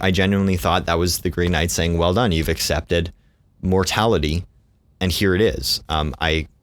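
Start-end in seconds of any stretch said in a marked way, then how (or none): none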